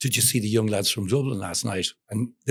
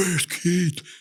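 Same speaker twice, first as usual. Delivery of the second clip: put-on wasted heckler yelling, high and drunken; 8 semitones higher than usual. Telling of a wasted front-row fan yelling at the tour manager, retelling a drunk fan's shout. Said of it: "And he shouts at him".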